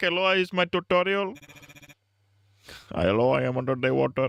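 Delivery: put-on Indian accent. Continuing the game character bit after reading his lines: put-on Indian voice. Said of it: "Is the Indian voice working?".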